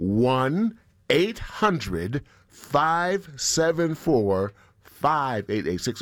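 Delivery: unhurried, slow and deliberate. Repeating the pledge phone number for listeners after being accused of rushing; slow, deliberate. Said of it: "so I'll say the numbers with all deliberate speed".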